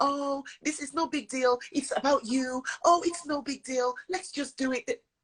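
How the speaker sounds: mock calm, slow, high, friendly, reassuring tone. Demonstrating the voices children hear online, imitating a friendly voice. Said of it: "They're very friendly".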